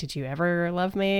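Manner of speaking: raw, unguarded, bare pleading tone. Retelling a character's question about love: imitating a raw question. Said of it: "in such a, like, raw way".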